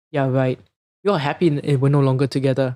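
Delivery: heavy, cutting, very sarcastic tone. Retelling their reply to a woman's sympathy, a retold sarcastic remark. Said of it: "I would give her a very sarcastic remark".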